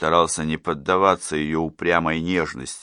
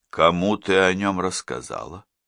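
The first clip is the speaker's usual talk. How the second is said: ordinary delivery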